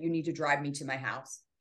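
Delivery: ordinary delivery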